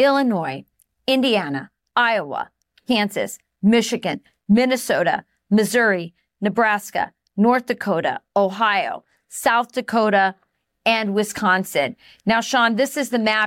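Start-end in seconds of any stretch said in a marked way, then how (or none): 0.0-11.9 really slow, deliberate, each word drawn out carefully. Listing the states so people can really hear, the speaker goes really slowly. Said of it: "Let me go through it really slowly".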